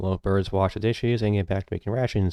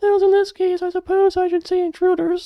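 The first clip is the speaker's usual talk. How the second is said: put-on creepy, very high, loud little-girl voice; 6 dB louder than usual. Voicing a character who speaks of intruders: messed up little girl voice. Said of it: "this is a messed up little girl voice".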